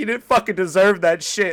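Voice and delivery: sobbing, loud crying wail. Describing crying while watching a TV show where a kid gets bullied, acting out own crying. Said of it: "I just start crying because I'm like".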